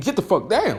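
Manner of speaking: high-pitched, mild yell. Showing how to get on your kids once the soft warning fails, shouting. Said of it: "you got to shout at them".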